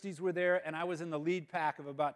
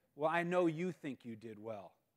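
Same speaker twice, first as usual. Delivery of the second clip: slow, completely serious tone. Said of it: "she gets all serious and says".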